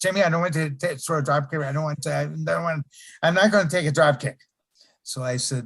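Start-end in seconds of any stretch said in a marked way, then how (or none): 0.0-4.4 very fast, rattled-off, run-together chatter. Quoting a man who hated to take a drop kick from him: imitating someone's fast talking. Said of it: "he talked real fast".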